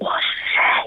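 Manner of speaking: airy breath-only voice, no tone.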